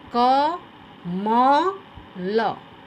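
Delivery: कमल syllable by syllable, म stressed. Teaching which syllable of कमल takes the stress: stress on middle syllable म. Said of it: "तो हम किस पे जोर दे रहे हैं? म पे।".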